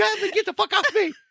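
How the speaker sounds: mock, very high, shrill, startled, panicked screaming. Describing the cat jumping on them in bed, retelling a scream. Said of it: "you're screaming like".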